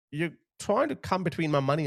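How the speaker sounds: ordinary talk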